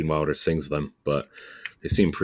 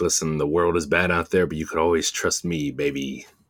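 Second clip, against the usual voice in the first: plain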